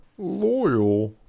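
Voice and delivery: shrill, very loud put-on voice, "loyal" held long and high. Saying the name Loyal in Michael Kramer Ogier voice. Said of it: "that's my impression of the uh, Michael Kramer. Loyal, like his Ogier voice".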